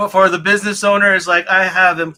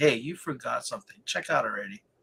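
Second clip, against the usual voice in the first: mock, very quiet, low, patronizing murmur; 6 semitones lower, 14 dB quieter than usual. Imagining the shopping cart reminding about a forgotten item, mock-condescending voice. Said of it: "in a condescending voice".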